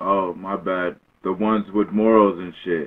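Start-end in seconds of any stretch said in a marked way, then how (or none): 1.2-2.9 deliberately deepened voice, louder. Told by another speaker to speak up, he repeats his remark in a deepened voice. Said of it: "Did you just deepen your voice?".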